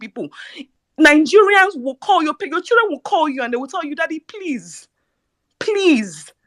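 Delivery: high, weeping, tearful pleading tone. Speaking to the people about their children calling them: crying. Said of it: "I am crying here".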